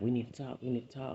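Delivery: ordinary talk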